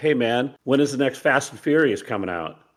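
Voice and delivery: normal talking voice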